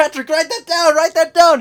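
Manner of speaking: very high, loud, shrill cartoon voice, belted out. Quoting a cartoon scene to explain a missed reference: SpongeBob voice. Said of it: "when SpongeBob is like".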